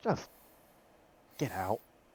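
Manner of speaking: soft, weary, fed-up, sighing exasperation. Voicing a character who sends everyone out: sighing, exasperated. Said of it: "she sighs, waves a hand".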